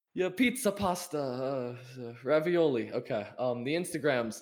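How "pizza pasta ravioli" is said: slow put-on Italian accent, words drawn out. Offering to speak a little italian as a joke: mock italian accent. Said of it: "Do you wanna hear me speak Italian?".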